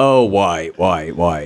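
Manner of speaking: low-pitched cartoon character voice. Reminiscing about old Flash sites, a speaker does a Homestar Runner impression. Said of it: "here's my Homestar Runner impression".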